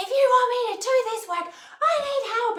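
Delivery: mock very high, top-of-the-lungs shriek. Recounting a 2011 story about screaming for help; retelling screaming for help. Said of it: "I'm like screaming at the top of my lungs".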